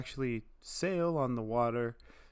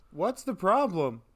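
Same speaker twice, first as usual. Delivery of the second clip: shouting, higher and louder; 6 semitones higher, 5 dB louder than usual. Calling out to a companion standing far away down the dock: yelling. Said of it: "Did you just yell?".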